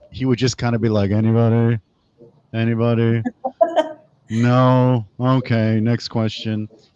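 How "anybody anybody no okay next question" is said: flat, very slow monotone drone, drawn-out "no". Recalling a teacher, speaker acts out him calling on the class, imitating a monotone teacher. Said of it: "the really monotone teacher".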